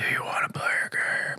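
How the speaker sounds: hushed, whispery movie-villain voice. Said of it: "But I think higher pitch".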